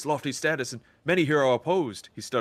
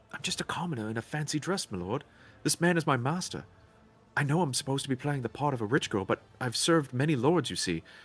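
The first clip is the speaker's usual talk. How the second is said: whispering quietly. A young woman playing a rich girl speaks to a lord, whispering quietly. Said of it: "she whispers quietly".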